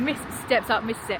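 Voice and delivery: ordinary talk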